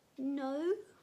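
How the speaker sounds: little, high, squeaky voice. Reading a story aloud, a boy denies hiding anyone: squeaky voice. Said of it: "I manage to say in a squeaky voice".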